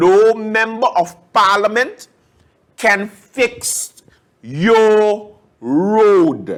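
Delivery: very slow, each word laid out separately. Repeating the point about members of parliament to listeners, said slowly. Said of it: "let me say it slow".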